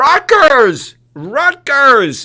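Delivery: shrill yelling, pitched way up. Speaker retells cheering at a basketball game, retelling yelling 'rutgers!'. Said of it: "I'm yelling".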